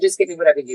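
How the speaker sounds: plain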